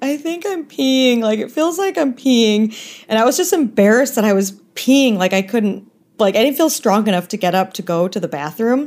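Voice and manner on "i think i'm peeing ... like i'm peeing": high, whiny little voice. Recounting labor, imitating their past self in a whiny voice. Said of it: "in this like whiny voice".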